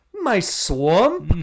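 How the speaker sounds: very loud Scottish bellow with swamp stretched out. Imitating Shrek after the others mention his Scottish accent: Shrek Scottish accent. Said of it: "Scottish accent".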